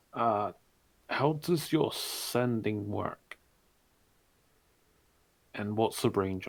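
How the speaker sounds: loud theatrical stage whisper. Role-playing a question to another character in the game, in a stage whisper. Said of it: "I'm stage whispering".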